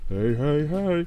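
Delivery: loud, high-pitched, belted cartoon voice. Imagining how someone in the scene would greet others: Fat Albert voice. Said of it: "in like the Fat Albert voice".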